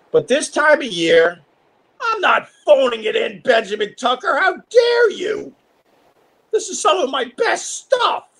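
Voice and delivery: very high, swooping, nervous, defensive squeak. Defending their own material when challenged by the other speaker, voice getting high, defensive. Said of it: "Why is my voice getting high?".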